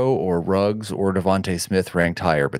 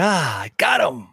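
put-on very slow, pitched-up, self-satisfied smug voice; 7 semitones higher than usual. Teasing another speaker by voicing his thought after asking a question: imitating someone feeling clever. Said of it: "felt so clever for asking that question".

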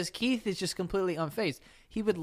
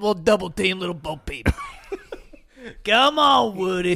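raised, cartoon toy dog character voice; 8 dB louder than usual. A speaker imitates how Slink talks, urging Woody on: Slinky Dog voice. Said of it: "Slink is like".

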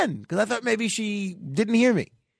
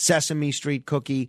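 usual speaking voice

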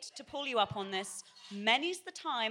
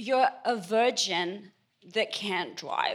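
put-on American accent, loud and slow; 2 semitones lower, 5 dB louder than usual. Acting out a movie line in a put-on american accent. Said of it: "Working on that American accent".

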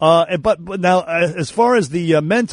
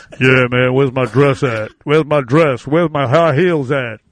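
put-on deep man's voice; 4 semitones lower than usual.

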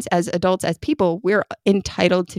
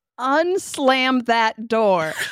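mock shouting, slower; 5 semitones higher than usual. A parent recalls a child slamming a door, retelling their own shout. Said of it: "and I shouted".

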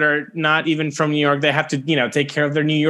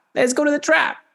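put-on New York accent, very high; 11 semitones higher than usual. Showing what a new york accent sounds like, in a new york accent. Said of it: "What's a New York accent like?".

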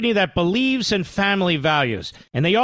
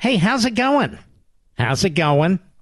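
sarcastic, friendly delivery. Mocking a TV host's greeting to his guest: mocking Jake Tapper impression. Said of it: "doesn't it sound like he's".

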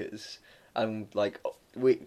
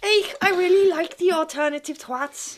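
loud, very high, badly done Liverpool accent, belted out; 6 dB louder than usual. A host gives a shout-out to a long-time listener, doing a bad Stephen Gerrard impression. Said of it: "That was the worst Liverpoolian accent".

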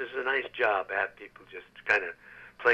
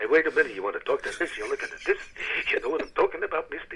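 edgy, nervous, high-pitched comic character voice; 5 semitones higher than usual. Finding a voice for the ant, a nervous kind of guy, Jackie Mason voice. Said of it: "So I thought of Jackie Mason".

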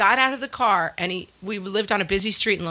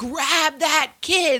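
put-on urgent, high, frantic scream; 8 semitones higher than usual. Speaker recalls chasing a runaway kid in ice skates: retelling own scream. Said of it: "I'm basically just screaming at anyone, like".

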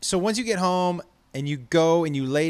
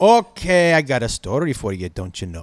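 loud, slow put-on accent sliding from Scottish into Southern; 4 semitones lower, 7 dB louder than usual. Starting a story with a put-on accent drifting from Scottish to Southern. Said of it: "You wanna hear it again?".

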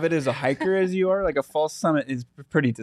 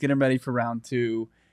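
ordinary talk, nothing marked

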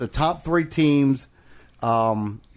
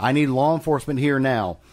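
ordinary delivery

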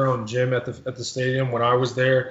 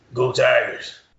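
put-on football coach voice, cheering; 3 dB louder than usual. Answering a request to say Go Tigers: Coach O impression. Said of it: "let's hear your "Go Tigers" by Coach O".

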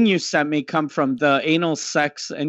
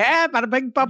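high-pitched fake Hindi gibberish; 8 semitones higher than usual. Retelling how the other speaker copied a man: imitating someone's mock hindi. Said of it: "You saw an Indian guy do this, and you went".

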